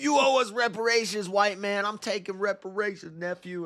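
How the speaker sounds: very high, furious, raging rant. Retelling how Juicy rages when told racism isn't real: imitating Juicy raging. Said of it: "he just rages".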